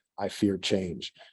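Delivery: mock dry, flat, expressionless deadpan delivery. Retelling what a man in a video says to the camera, retelling a deadpan line. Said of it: "looks deadpan at the camera and says".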